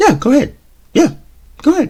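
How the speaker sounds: very high, daring, challenging parent voice. Speaker acts out a reply to a child's excuse about cleaning the kitchen: shifted pitch. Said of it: "you hear that change in the pitch in the voice".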